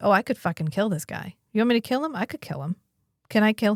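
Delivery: put-on angry voice. Retelling an episode where Garibaldi takes an instant dislike to someone: imitating Garibaldi's anger. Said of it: "he's immediately like".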